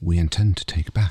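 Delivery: ordinary delivery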